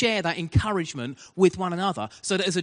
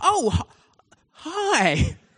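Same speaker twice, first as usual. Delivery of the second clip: mock nervous, very high, jittery, stammering voice; 9 semitones higher, 4 dB louder than usual. Retelling a preacher greeting the assessor before the service: imitating a nervous greeting. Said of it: "It was like a nervous first date".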